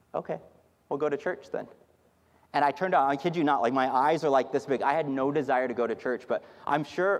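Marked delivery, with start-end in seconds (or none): 0.1-1.6 soft-spoken, sweet, quiet delivery. Retelling Tiffany's reply, in Tiffany's sweet, quiet voice. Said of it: "in her sweet, quiet voice".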